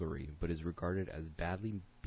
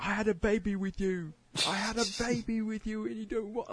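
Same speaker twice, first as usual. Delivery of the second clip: shrill, high-pitched, loud yelling; 8 dB louder than usual. Retelling what a girl on the subway said: imitating a girl yelling.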